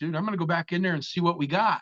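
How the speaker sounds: calling out. Retelling what one man yelled to another: imitating someone yelling.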